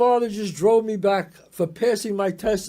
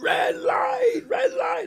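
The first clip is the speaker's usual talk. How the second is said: mock, very high, drawn-out screaming yell. Retelling a friend screaming a warning from the passenger seat: imitating Mikey screaming. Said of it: "he screams in my ear".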